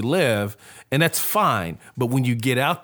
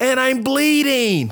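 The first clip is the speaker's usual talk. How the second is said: mock child's far-off call, raised and very high; 14 semitones higher, 5 dB louder than usual. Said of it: "he says from a distance".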